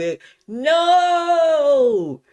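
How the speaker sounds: mock very high shout, "no" stretched long. Retelling a basketball game moment to listeners: imitating own yell. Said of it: "I yelled".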